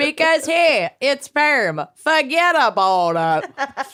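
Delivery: put-on Wisconsin accent. Repeating a cheese shop owner's quote: Wisconsin accent. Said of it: "The most, like, Wisconsin".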